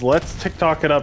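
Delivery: ordinary delivery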